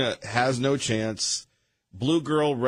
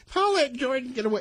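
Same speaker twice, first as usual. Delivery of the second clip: put-on very high small-child voice; 11 semitones higher than usual. Mocking another speaker's anger: imitating Liberal Steve's high little-kid voice. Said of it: "his voice gets higher and he sounds like a little kid".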